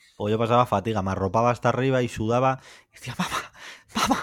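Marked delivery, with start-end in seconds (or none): 3.2-4.3 hushed whisper, swallowed back, held inward. Retelling calling mother at night without making noise: imitating own past hushed call. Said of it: "yo lo decía, "pa' dentro"".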